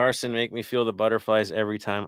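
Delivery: ordinary talk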